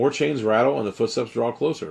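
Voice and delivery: ordinary talk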